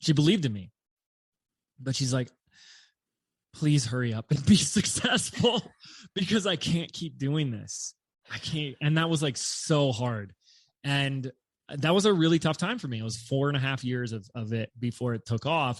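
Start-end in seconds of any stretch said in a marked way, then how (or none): 3.5-8.8 mock begging, desperate, wrung-out and heartfelt. Retelling what the speaker's mother said while she believed in him: imitating a desperate plea. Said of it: "she said it in such a like emotional, desperate way".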